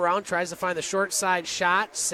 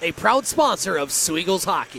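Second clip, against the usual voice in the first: full on-air radio announcer voice; 3 dB louder than usual. Reading a sponsor plug, putting on a radio announcer voice. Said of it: "That's my radio voice".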